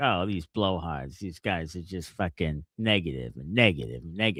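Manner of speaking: low, soft, critical scoffing voice.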